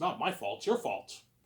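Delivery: ordinary talk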